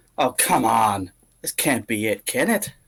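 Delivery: jeering, mocking, taunting tone. Voicing a dodging foe who taunts the attacker: mocking. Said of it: "in a sort of mocking way".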